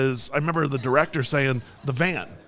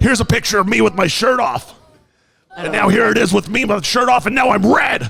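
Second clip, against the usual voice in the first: put-on wild broadcaster voice, higher and louder; 7 semitones higher, 8 dB louder than usual. Continuing the Alex Jones bit while pitching supplements: Alex Jones impression. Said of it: "slamming your desk, and then it's like".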